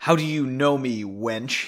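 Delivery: spitting the words. The man on the ground to the woman who recognized him, spitting the words. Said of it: "he spat".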